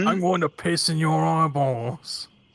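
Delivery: put-on thick, angry goblin accent, pierce said as piss. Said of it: "the accent made it sound like".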